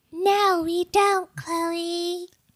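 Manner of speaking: very high, weird, annoying, mouthy alien-ish voice. Answering a co-host on behalf of the listeners: annoying alien-like voice. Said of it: "person with like a mouth voice".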